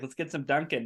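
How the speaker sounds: put-on Boston accent. Imitating the other person being picked up from the airport: boston accent. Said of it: "are you getting a Boston accent?".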